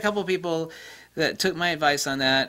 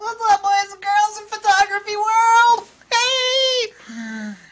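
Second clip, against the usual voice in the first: very high, wild, silly, crazy put-on voice; 7 dB louder than usual. Greeting the boys and girls of the photography world, in a crazy put-on voice. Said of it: "What's up with that crazy voice?".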